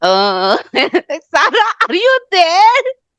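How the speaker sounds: put-on nervous voice. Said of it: "She used to speak like this, so nervous".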